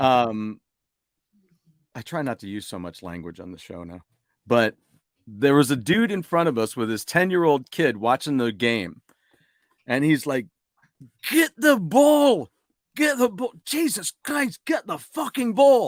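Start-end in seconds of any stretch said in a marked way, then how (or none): 11.3-15.9 very high, shrill yelling outburst. Retelling a dad at a hurling match yelling at a player: imitating a fan yelling. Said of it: "He's just yelling at this guy".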